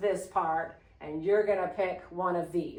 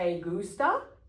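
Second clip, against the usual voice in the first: question-like rise on gusta. Spanish class, teacher has students repeat, rising pitch on gusta. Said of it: "See how it goes up a little bit?".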